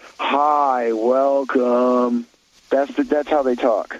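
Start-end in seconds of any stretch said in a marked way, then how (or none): 0.2-2.3 mock bored, drawling young-sounding voice. Imitating an unmotivated desk greeter saying welcome: imitating a bored Gen Z drawl. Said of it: "I'll give you the tone".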